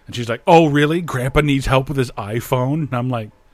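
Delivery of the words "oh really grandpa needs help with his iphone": mock sassy, snappy retort. Retelling how a movie's hacker answers her boss: imitating a sassy hacker. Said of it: "all the hackers are sassy".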